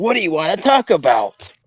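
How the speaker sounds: swooping sarcastic wrestler-style delivery. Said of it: "I'm being sarcastic".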